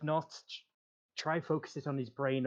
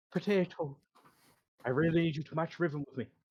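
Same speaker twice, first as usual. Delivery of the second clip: put-on Irish accent in a character voice; 3 semitones higher than usual. A player urges a teammate to match Riven with them, in an Irish accent. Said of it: "my Irish accent's gone".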